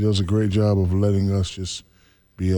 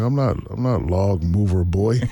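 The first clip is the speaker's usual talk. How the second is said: ordinary delivery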